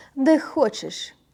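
uncaring tone. Asked by a girl where to start searching, she answers; indifferent. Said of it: "Таким тоном, ніби їй справді було байдуже".

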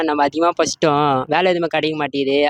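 ordinary talk

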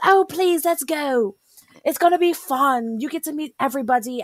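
put-on English accent. Retelling what he said to her about the trip, English accent. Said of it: "with the English accent whenever you're talking as anyone who isn't Evie".

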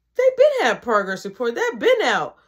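ordinary delivery

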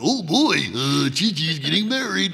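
high, loud, swooping goofy derpy voice with wide pitch swings. Showing the voice of the character voiced most for fun: Ox King voice. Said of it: "the one I have the most fun voicing is Ox King".

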